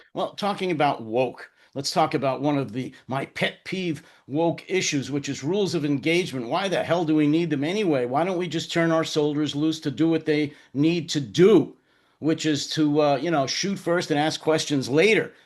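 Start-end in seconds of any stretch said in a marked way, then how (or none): none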